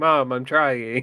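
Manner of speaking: put-on sorrowful, hard-done-by, sad little voice. Voicing what he seems to say with his sad look: put-on sad voice. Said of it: "He looks at you with such sadness of like".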